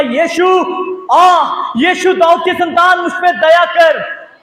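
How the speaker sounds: shouted cry, calling out loudly. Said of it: "उसने चिल्ला के कहा".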